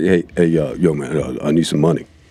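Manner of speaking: relaxed, everyday way of talking. Retelling what a colleague said when asking for money: imitating how Bates talks. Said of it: "you know how he talks, he goes like".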